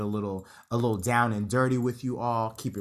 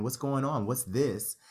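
ordinary talk, nothing marked

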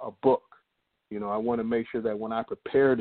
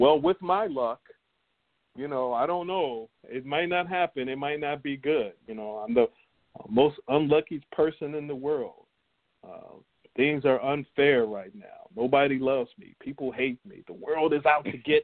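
joking, sarcastic, self-pitying woe-is-me lament; 4 semitones higher than usual. Retelling own joking remarks about bad luck: imitating own sarcastic self-pity. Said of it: "I joke around and sarcastically I'd be like".

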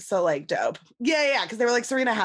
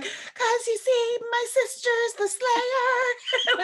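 extremely high pitch, drawn out. Imitating an actress's line from a musical episode: imitating Michelle Trachtenberg's high-pitched voice. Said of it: "Michelle Trachtenberg's extremely high-pitched voice being like".

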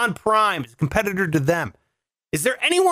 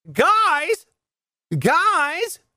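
higher-pitched, each guys drawn out; 7 semitones higher than usual. Joking about a late flight, doing a Tom Hanks impression. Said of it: "That's my Tom Hanks impression".

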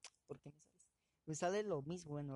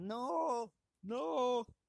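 mock child wailing, very high, loud crying scream; 9 semitones higher, 8 dB louder than usual. Retelling how a child reacted to a prank, imitating a crying scream. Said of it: "El nene se puso a llorar y a gritar".

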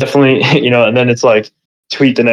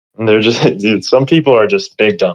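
ordinary talk

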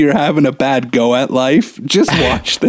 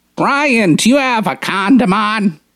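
put-on high-pitched little old woman's voice; 7 semitones higher than usual. Retelling what a woman said to brian, in an old lady voice. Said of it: "I love your old lady voice".

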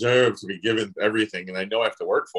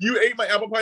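mock accusing, high and tearful; 12 semitones higher than usual. Retelling an accusation over eaten apple pie: imitating someone crying. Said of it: "she was in blistering tears".

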